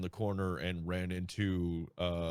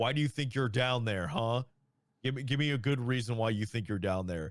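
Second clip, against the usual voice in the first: clear, quick, concise interrogating voice; 5 semitones higher than usual. Retelling turning a corner, the speaker quotes the Sergeant Major in a clear, concise voice. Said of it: "in a very clear and concise voice".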